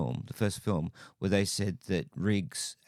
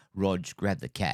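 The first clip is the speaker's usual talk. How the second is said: put-on American accent slipping into Australian. Imitating an actor's line from a film: imitating an actor's American accent slipping to Australian. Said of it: "it's almost American, but cat".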